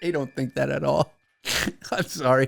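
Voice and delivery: laughing while talking. Admitting a joke claim is false, laughing while talking. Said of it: "I'm breaking character here".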